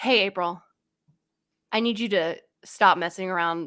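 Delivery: play-acted grave, dead-serious tone. Retelling a warning given in the car: imitating someone getting really serious. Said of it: "he gets really serious".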